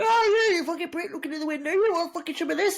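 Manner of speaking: very high-pitched, raging, furious screaming. Retelling two women yelling at each other in the street: imitating women yelling. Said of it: "two women going mental at each other".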